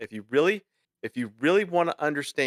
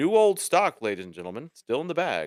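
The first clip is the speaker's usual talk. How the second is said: radio ad pitchman announcer voice. Describing eBay listings, then joking like a radio advertisement voice. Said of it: "I'm a radio advertisement".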